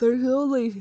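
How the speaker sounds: words coming out mid-yawn. Chatting about mobile games, the speaker yawns mid-sentence: yawning while talking. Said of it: "sorry, I was yawning".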